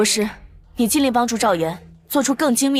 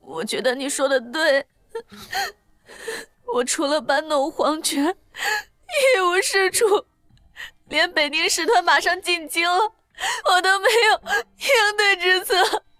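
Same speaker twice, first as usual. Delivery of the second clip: tearful crying voice, much higher; 8 semitones higher than usual. The emperor answers the one who scolded him, tearful and crying. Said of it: "怎么就哭了呢？".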